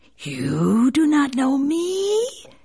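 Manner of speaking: high, swooping hiss in a serpent voice. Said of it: "hissed the snake".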